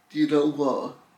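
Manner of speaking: plain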